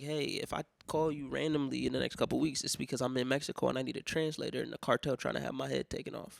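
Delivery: ordinary delivery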